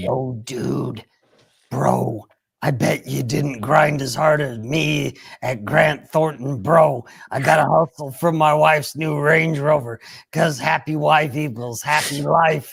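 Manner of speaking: deep, goofy, dopey put-on cartoon-dog voice. Speaker reading a text aloud for sound effects, deep put-on voice. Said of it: "You sound like Ralph the dog".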